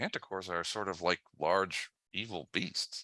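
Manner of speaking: hushed, very quiet, low dropped voice. Running the game, the speaker voices a character for the players in a dropped voice. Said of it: "he might drop his voice at this point".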